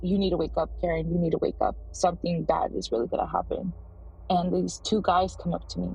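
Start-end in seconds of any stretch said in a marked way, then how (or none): none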